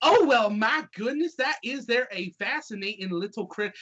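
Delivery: put-on chatty Southern gal accent. Voicing the Southern gal as she talks to Biscuit and Beauregard, in a Southern accent. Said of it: "get talked to by the Southern gal".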